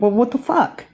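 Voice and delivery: exasperated, fed-up, frustrated outburst. Recounting to the listener a promise they never got, retelling own frustration. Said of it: "I was really frustrated and like".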